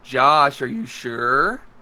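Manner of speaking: slow condescending tone. Showing how the speaker questions Josh: condescending, parental tone. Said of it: "I do it more of a condescending way".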